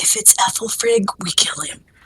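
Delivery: soft whisper. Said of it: "And I whisper to Gwen".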